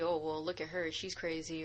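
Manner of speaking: ordinary talk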